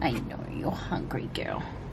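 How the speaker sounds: soft, quiet, unvoiced whisper.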